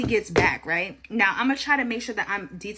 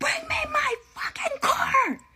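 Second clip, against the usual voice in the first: enraged, very high, drawn-out scream. Retelling finally reaching someone at four in the morning about the car: retelling screaming at someone. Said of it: "I'm screaming".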